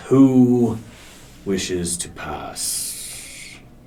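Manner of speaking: slow, booming, sinking rumble.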